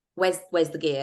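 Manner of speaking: ordinary talk, nothing marked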